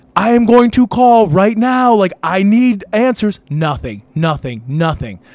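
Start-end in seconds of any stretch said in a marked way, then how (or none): 0.1-3.3 loud, high, raised yelling. Retelling shouting at an unresponsive friend at night: imitating own past yelling. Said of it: "yelling in his fa-".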